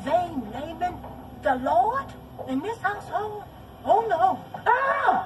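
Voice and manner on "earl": loud high-pitched holler. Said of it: "What you hollering at me for".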